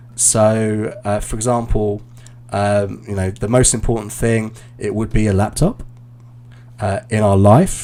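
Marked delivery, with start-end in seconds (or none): 4.8-7.0 pitch lifts upward at the end of laptop. Imitating someone's sentence endings going up, rising pitch on laptop. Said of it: "so everything was going up".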